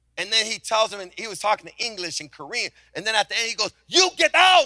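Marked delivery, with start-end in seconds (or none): 3.9-4.7 shrill, very loud, high-pitched scream. Retelling how the owner yelled at his architect: imitating someone screaming. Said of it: "Like that, screaming in front of".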